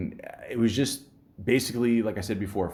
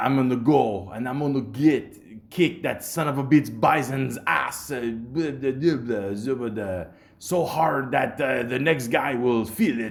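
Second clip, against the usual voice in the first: put-on French-accented English; 4 semitones higher than usual. Retelling a speech someone gives, in a french accent. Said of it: "for some reason, I sound French".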